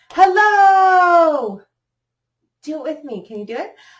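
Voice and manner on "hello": very loud, very high, drawn-out shout. Leading listeners in a clapping rhyme, saying hello as loud as possible. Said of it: "Let's say hello as loud as we can".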